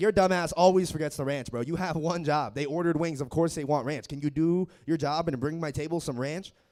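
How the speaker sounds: ordinary delivery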